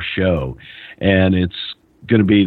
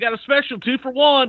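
high-pitched carnival barker voice, pitched way up. Imitating Hillbilly Jim as a porn arcade barker: imitating Hillbilly Jim as a barker. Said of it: "Yeah, Barker".

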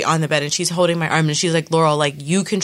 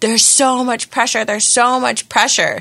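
acted-out, high-pitched, straining, pushing scream; 7 semitones higher, 3 dB louder than usual. Telling of her labour on the bed, acting out how she was screaming. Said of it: "And I'm just screaming".

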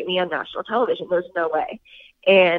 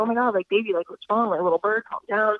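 put-on panicked voice; 2 semitones higher than usual. Retelling how Evan reacted, kinda panicked: imitating Evan panicked. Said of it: "kinda panicked".

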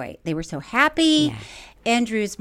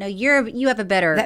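ordinary talk

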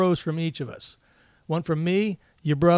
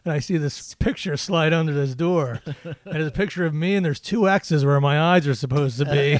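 ordinary talk

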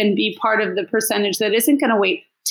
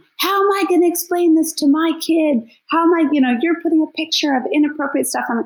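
put-on heated angry yell, pitched up, towering man voice; 7 semitones higher than usual. Retelling a man who towered over her and yelled, imitating a man yelling. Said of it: "he's just yelling".

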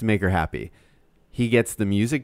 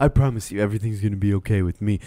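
put-on monotone male voice. Imitating a contestant comforting a sad Hannah: imitating Tyler C. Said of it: "I'm gonna use this voice the whole time".

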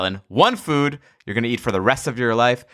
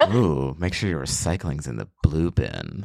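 sexy, seductive, breathy voice, much lower; 6 semitones lower, 4 dB quieter than usual. Showing that anything can be turned sexy, sexy breathy voice. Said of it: "you have a future as a voice actor for porn".

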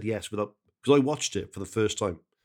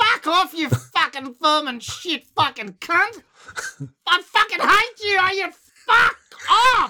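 put-on furious yelling, louder; 6 dB louder than usual. Describing a half-hour rant, imitating furious shouting.

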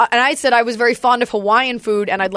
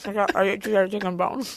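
eating while talking, lower and quieter; 3 semitones lower, 8 dB quieter than usual. Answering another speaker while eating: talking with mouth full. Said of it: "chew your food before you talk".

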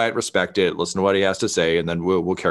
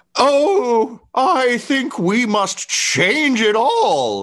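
shrill, very high shouted cry; 4 dB louder than usual. Game narrator voicing a masked dwarf who yells out, masked dwarf yelling out. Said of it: "He just kind of yells out".

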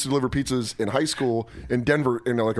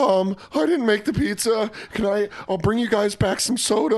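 put-on scared, hesitant, nervous voice, high pitched; 10 semitones higher than usual. Retelling customers yelling about an uncut pizza: acting out being scared. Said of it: "That was the most afraid".

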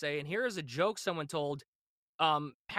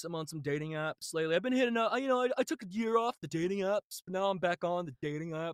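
mock dull, boring stand-up comedian delivery; 2 semitones higher than usual. Mocking comics going up on stage: imitating a dull stand-up comic. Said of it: "schmucks going up on stage doing".

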